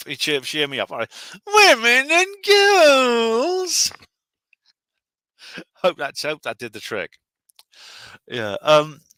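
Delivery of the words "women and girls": exaggerated, shrill, very high, very loud put-on voice, girls stretched. A listener asks him to say a phrase in his feminist voice. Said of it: "will you say women and girls in your feminist voice".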